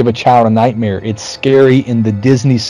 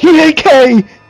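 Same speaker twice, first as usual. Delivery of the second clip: put-on panic, much higher pitch; 4 dB louder than usual. Retelling a movie scene where Jay turns to Bill Murray, imitating Jay freaking out. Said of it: "all freaked out".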